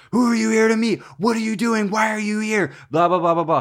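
high, forceful yell. Retelling security guards grabbing a woman after a flight: imitating someone yelling. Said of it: "start yelling at her and are like".

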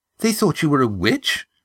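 disbelieving. A listener reacts to the story she has just heard, incredulous. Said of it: "asked Eva incredulously".

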